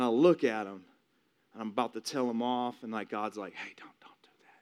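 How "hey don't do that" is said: acted-out whisper, much quieter. Retelling being about to tell someone off when God speaks up, retelling a whisper. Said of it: "It's just like a whisper".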